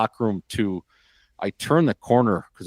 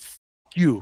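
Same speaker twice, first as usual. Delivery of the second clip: put-on angry swearing; 5 semitones higher than usual. Retelling what the coach said on the phone, imitating an angry curse. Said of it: "And he just goes".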